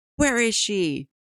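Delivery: mock very high, shrill, worked-up, heated shout. Retelling a scene where Betty gets heated, imitating Betty's heated yell. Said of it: "Betty gets real heated and she yells".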